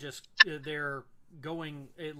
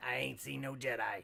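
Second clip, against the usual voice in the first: gravelly, rough, creaky alien bartender voice. Voicing a Rodian bartender answering the clone about the Jedi. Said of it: "he's a Rodian".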